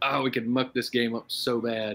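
ordinary talk

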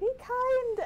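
shrill, very loud, high-pitched screech. A player in a tabletop game voices Milos during an axe attack: Milos screaming. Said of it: "Milos screaming".

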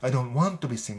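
"want" punched with heavy stress. English sentence example: stress on want. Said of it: "このワントを強く言ってるみたいですね".

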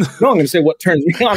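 ordinary talk

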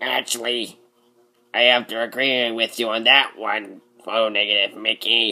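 weird, goofy oddball cartoon voice. In a fan dub, voicing a character answering a co-star in a weird goofy character voice. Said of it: "You sound like a weirder version of Papyrus".

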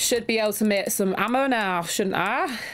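plain Manchester accent in ordinary talk. Talking to viewers mid-game, speaking in a Mancunian accent. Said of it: "speaking in what apparently is a Mancunian accent right now".

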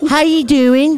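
light, amateur British accent. Greeting a guest after a request for British accents only: British accent. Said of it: "Mine is more of just like".

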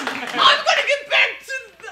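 frantic, excited, high, loud, laughing exclamations.

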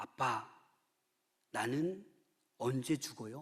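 small, plain, low and quiet voice. Speaker retells a five-year-old daughter speaking to her father; low voice. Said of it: "이 딸이 낮은 목소리로".

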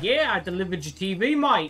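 slow, fake, put-on Australian accent. Quoting a delivery man on the porch, in a put-on accent. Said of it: "Did he actually have that accent?".

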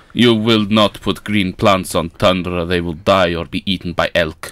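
put-on Russian accent. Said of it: "Accent change to Russian".

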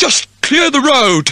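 commanding call, pitched very high. A police constable answers a request for a penny, ordering. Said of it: "he ordered".

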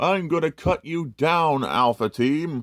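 put-on villainous voice, high, menacing, scary. Reviewer showing a kit voices a sword-wielding figure in a scary voice. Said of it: "I couldn't help my scary voice".

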